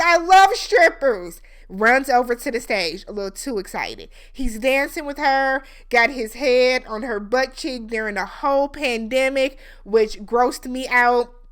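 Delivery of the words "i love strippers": loud, high, slow yell. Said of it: "[name] yells out".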